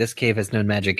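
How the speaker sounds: usual speaking voice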